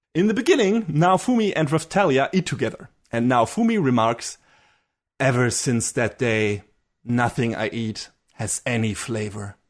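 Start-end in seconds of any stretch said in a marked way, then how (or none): 5.2-9.6 put-on grim voice, lower and slower. Recounting a scene where Naofumi eats with a companion, imitating his grim voice. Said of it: "With that really grim voice and face".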